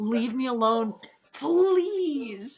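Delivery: high, very slow, heartfelt pleading, "please" drawn out. Retelling a radio reply while being chased, imitating Charles' heartfelt plea. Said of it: "he said this with, like, the, the very bottom piece of his, like, heart and soul".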